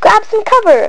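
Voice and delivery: very high-pitched, forceful shouting. Dynamite rolls across the cell floor and one prisoner calls to the others: shouted. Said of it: "shouted Blade Bocelli".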